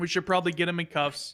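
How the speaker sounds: ordinary delivery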